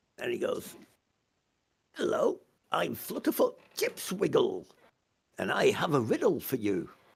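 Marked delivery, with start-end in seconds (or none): 2.0-6.9 giggly, sing-song voice, giggling through the words. Running a game, voicing a character who stops, giggles and introduces himself. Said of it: "looks at you and giggles".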